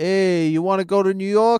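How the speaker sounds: put-on, casual Boston accent. Asked to do a Boston person in New York: Boston accent. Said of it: "A Boston person in New York now".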